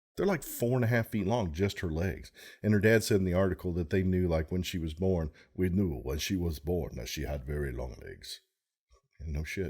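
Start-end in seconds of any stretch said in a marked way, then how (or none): 5.6-8.4 put-on low, spooky, haunted Russian accent. The speaker quotes a father from an article, haunted Russian accent. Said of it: "That's my haunted Russian accent".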